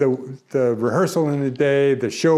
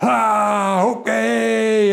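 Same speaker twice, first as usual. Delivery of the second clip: loud, high whooping cheer with a drawn-out ah; 9 semitones higher than usual. Retelling how the actor playing the lead came down the back, imitating a loud cheer. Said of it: "he gives a loud cheer".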